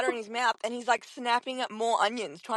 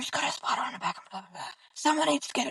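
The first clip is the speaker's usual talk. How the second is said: hushed, murmured whisper. Retelling how friends quietly pointed out a spider: imitating a whisper. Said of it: "we're all whispering".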